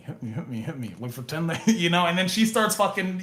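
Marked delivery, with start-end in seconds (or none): 0.0-1.7 very quiet, low half-whisper under the breath. Speaker re-enacts secretly urging a woman with a chair to hit him, re-enacting a half-whisper. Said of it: "I'm whispering like".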